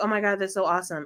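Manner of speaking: plain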